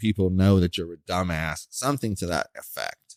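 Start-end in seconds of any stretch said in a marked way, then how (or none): none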